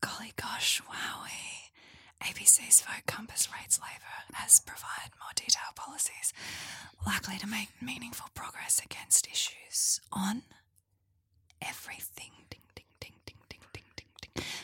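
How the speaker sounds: soft, hushed, whispered ASMR delivery. Reading out a tweet as an ASMR bit: ASMR whisper with a smile. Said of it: "I'm gonna do this A S M R whisper smile".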